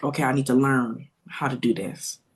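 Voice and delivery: put-on, imitated, almost defeated-sounding tone. Retelling a mother's pause and reply: imitating an almost defeated tone. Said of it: "she said it in this almost defeated tone".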